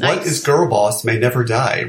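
normal talking voice

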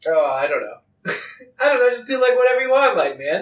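jokey character voice. Playing a lord telling the guard captain to do whatever he wants: in character, joking manner. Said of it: "I say it in a very joking manner".

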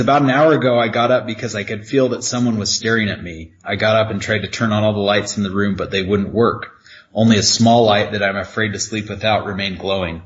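plain

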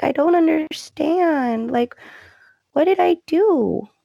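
play-acted confused, high, on the verge of crying. Retelling how a soap character sounded in an argument: imitating Paris about to cry. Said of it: "her voice was all like she was about to cry".

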